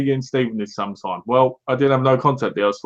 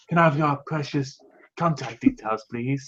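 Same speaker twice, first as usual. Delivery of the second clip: put-on creepy tone, quieter; 6 dB quieter than usual. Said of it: "in the most creepiest sense".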